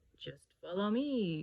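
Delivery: put-on croaking old toad voice. A toad offers to lead Harry to water, croaking old toad. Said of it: "croaked a lumpy old toad".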